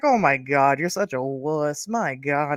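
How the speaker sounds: amused, slow teasing through laughter. Retelling how a friend teased them about being scared: imitating a friend laughing while teasing. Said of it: "she's laughing".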